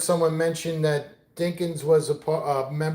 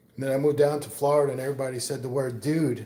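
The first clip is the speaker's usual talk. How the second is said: ordinary talk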